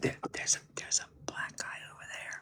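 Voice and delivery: breathy, hushed whisper under the breath. Retelling how customers in a pawn shop talk: imitating someone whispering. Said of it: "Why are you whispering that to me?".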